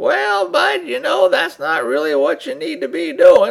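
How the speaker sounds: terrible put-on voice, very high, rough, creaky, swooping, loud. Describing how a man from a movie sounded, doing an impression of his voice. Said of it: "this is going to be a really terrible impression. But he had a voice kind of like".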